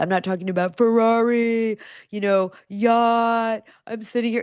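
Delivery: high, slow marketing-bro sales-pitch voice. Talking about showing yourself living the dream, doing the bro marketing voice. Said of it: "I'm doing the bro marketing voice".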